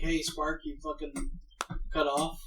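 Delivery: ordinary delivery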